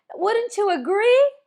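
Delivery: agree ending with a rising, question-like lift. Explaining downswing tone by demonstrating the opposite, rising upswing intonation. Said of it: "that sounds so like repelling".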